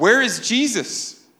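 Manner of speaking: high-pitched, slow, mocking taunt.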